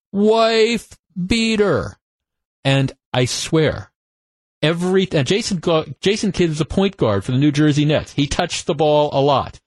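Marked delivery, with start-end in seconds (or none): 0.1-1.9 very high-pitched scream with "wife" drawn out. Retelling what a fan screamed whenever a player touched the ball, imitating a scream. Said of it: "the guy screamed".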